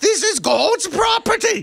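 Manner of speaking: put-on very high nun-style voice, vaguely British accent. Prompted to do the accent from the story: imitating Sister Mary's accent. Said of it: "do the accent".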